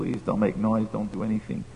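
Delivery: acted-out, desperate, mock begging tone. Retelling a story, acting out a man begging the others: acting out desperate begging. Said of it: "He was begging them, pleading".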